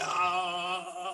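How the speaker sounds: strained, rising, pained groan of dismay.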